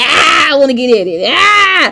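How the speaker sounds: very drawn-out, slow, frustrated groan. Retelling wanting to scratch an itching incision: imitating own itchy frustration. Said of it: "I be like".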